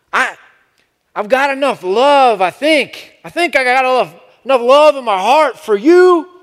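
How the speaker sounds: imitated cadence, high, loud and resonant.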